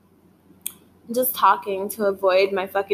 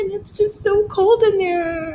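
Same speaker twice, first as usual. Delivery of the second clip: high, wailing fake cry voice. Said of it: "thought that was my real cry voice".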